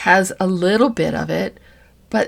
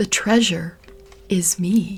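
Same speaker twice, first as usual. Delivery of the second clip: slower whispered speech. Giving listeners a journal prompt, the speaker says it whispering. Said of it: "I'm going to whisper this to you".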